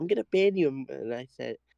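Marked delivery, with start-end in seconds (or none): 0.0-0.7 put-on tearful, high, sobbing voice. Retelling what a crashed racer said after the wreck: imitating someone crying. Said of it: "he starts crying, saying".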